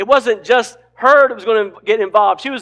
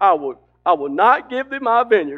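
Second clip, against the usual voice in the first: acted pouty, sulky, sad voice. Retelling a story, the speaker acts out the husband's refusal in a mock-pouty, sad voice. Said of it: "You can imagine his pouty, sad voice".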